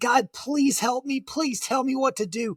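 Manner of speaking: put-on, high, anguished, desperate crying-out. Retelling praying while hiding in a thorn bush: retelling crying out to god. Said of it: "I was crying out".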